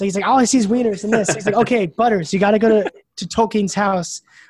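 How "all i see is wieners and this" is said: acted, really angry, fed-up, pissed-off outburst. Retelling a show's plot, quoting an upset character, mock super pissed. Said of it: "and he's like super pissed".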